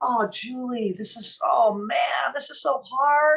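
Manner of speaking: mock crying, high, very slow. Retelling a moment of breaking down to Julie: acting out past sobbing. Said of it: "So I was just crying".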